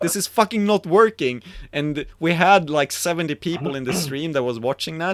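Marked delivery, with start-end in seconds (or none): 0.0-1.4 top-of-the-lungs fed-up, frustrated, high-pitched yell. Retelling a moment when a stream's sound failed: retelling a scream. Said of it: "screamed at the top of my lungs".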